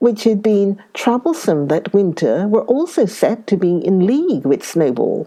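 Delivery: ordinary delivery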